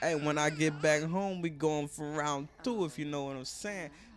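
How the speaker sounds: normal talking voice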